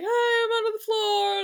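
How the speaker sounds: very high-pitched shout. Stuck under a floor, speaker retells calling to approaching footsteps: retelling yelling out. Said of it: "I'll yell out".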